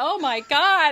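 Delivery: acted gasping. Recalling being asked for a phone number, retelling a gasp. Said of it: "I was like gasping".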